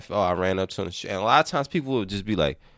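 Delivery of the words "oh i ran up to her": mock deadpan, lower pitch. Showing how he answers people who ask how the couple met; retelling a deadpan answer. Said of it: "I'll just say it with a deadpan".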